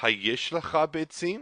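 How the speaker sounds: question-like rising inflection through beitzim. Hebrew lesson example showing how a question is marked, rising question inflection. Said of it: "you can hear the sound that this is an inflection in the voice".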